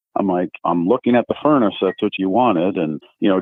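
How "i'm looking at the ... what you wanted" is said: ordinary talk, nothing marked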